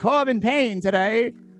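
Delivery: put-on old-fashioned newsreel announcer voice. Reading out an article about corbin payne, done in an old-timey voice. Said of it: "in the old timey voice".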